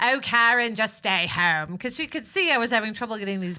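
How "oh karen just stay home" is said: put-on British accent, louder. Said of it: "Was she really British, or just imitated British?".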